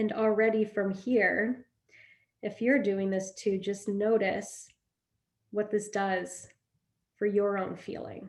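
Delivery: slowed-down, slumped delivery. Guiding viewers through a posture exercise; talking slower, slumped. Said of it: "I'm starting to talk a little slower".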